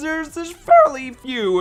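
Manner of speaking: voice breaking up, cracking, very high. A YouTuber listing the negatives of making videos, voice cracking. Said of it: "there's a voice crack right there".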